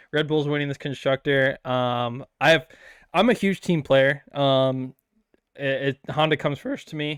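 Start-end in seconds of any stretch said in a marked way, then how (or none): 6.0-7.2 cracking voice. Explaining that the team comes first and teammates have priority, voice cracking. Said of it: "voice crack".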